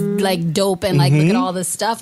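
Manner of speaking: plain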